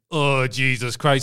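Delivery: deflated, uneasy, uncomfortable tone, confidence drained away. Retelling the wrestler's expression changing: imitating a deflated uncomfortable mutter. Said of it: "the aggression and the sh-, assuredness drains away".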